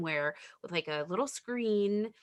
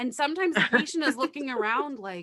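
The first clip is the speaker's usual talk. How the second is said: plain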